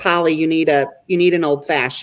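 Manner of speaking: ordinary delivery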